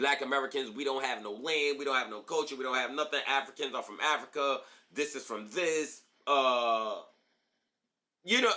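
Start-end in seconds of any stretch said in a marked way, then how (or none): none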